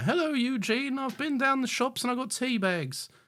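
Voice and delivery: put-on very high-pitched old lady voice. Describing a Torchwood scene where Tosh's phone rings, imitating an old lady. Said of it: "Some old dearies like".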